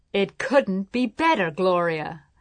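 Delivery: ordinary delivery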